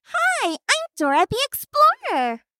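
very high, swooping, sing-song cartoon voice. Greeting an interviewer in a recognizable cartoon role: Dora the Explorer voice. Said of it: "you might recognize this voice".

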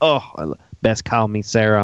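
put-on speaking with a southern accent. Describing a woman in a show and quoting her, in a southern accent. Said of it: "she had that southern accent".

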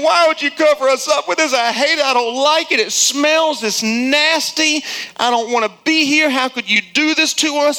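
high-pitched, play-acted, upset screaming. Voicing those covered with fertilizer, retelling their scream. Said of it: "And they're screaming".

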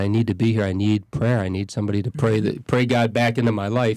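ordinary delivery

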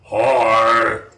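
loud deep monster-like voice. Retelling a strange voice that answered a little kid, in a loud deep monster-like voice. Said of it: "like Cookie Monster crossed with something else".

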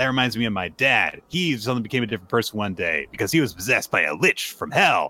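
plain

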